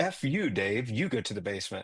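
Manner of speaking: forceful emphatic delivery. Retelling telling dave off about the basement: retelling an emphatic retort. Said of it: "I was very emphatic about it".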